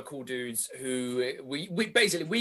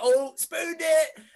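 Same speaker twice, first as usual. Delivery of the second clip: high, slow, loud shout. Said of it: "I'll be like".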